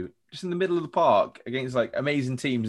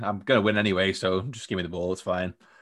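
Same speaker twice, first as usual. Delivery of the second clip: put-on nonchalant voice, lower pitch; 4 semitones lower than usual. Imitating a footballer on the pitch: imitating a nonchalant player. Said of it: "Just so nonchalant".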